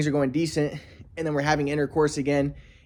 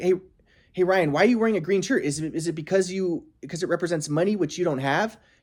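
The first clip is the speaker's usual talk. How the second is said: put-on nasty, snide, catty tone; 3 semitones higher than usual. Retelling a friend's question about the green shirt: imitating a snide taunt. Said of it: "being a bitch to me".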